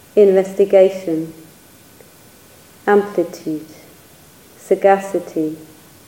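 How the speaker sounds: slow reading with long pauses between items.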